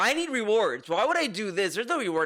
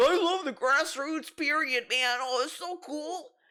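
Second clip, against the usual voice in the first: mock sarcastic, starry-eyed, gushing enthusiasm; 6 semitones higher than usual. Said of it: "he's mocking this".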